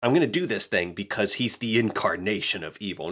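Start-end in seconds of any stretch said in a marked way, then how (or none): none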